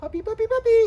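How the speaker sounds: very high, very loud calling voice. Explaining positive interrupters for a dog, the speaker says it in a high-pitched voice. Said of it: "in a high pitched voice like".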